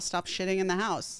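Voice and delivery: ordinary talk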